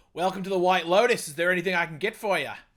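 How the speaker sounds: loud, put-on Australian accent. Doing the hotel manager from a show, Australian-sounding Armand voice. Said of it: "that was more Australian".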